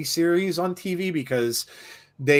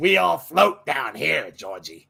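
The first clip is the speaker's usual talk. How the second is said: put-on elderly smoker woman voice. Repeating a remembered movie line to a co-host, in an old woman smoker voice. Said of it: "sounded like an old woman smoker".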